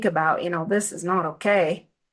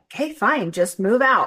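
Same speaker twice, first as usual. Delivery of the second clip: acted, sarcastic, fed-up, annoyed tone; 3 semitones higher than usual. Retelling an angry reply giving permission to move out: imitating a sarcastic remark. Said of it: "she said it sarcastically".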